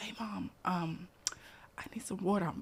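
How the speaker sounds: mimicked whisper. A mother retelling her son's bedtime request after the kitchen closed, retelling her son's whisper. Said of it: "So he whispers".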